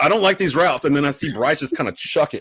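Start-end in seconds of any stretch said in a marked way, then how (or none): 0.0-0.8 mock screaming, higher. Retelling watching a play on TV: retelling a scream.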